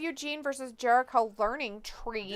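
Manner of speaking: normal talking voice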